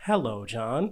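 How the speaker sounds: put-on robotic phone voice. Describing someone raising their phone, the speaker voices the iPhone in a robotic voice. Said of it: "It's just like it's just like a robotic voice".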